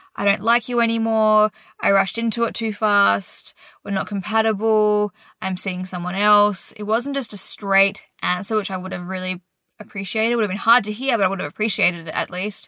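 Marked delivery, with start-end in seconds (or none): none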